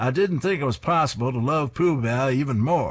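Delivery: loud, clumsy, terrible put-on Maine accent. Reading a comic strip's final-frame remark aloud, terrible Maine accent attempt. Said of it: "my terrible attempt at a Maine accent".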